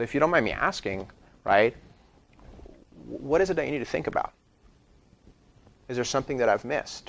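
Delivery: very calm, soft, even tone. Speaker in the mortgage business modeling a question to a buyer, very calm tone. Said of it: "in a very calm tone of voice".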